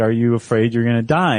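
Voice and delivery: ordinary talk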